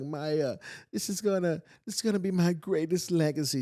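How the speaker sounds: crying, high pitch, overcome with emotion. Retelling a woman's emotional phone call about her school, imitating someone crying. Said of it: "She's on the phone crying".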